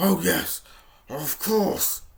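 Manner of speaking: loud, slow, growled wolf voice. Reading a story aloud, the wolf answers the little girl; growling wolf voice. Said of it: "growled the wolf".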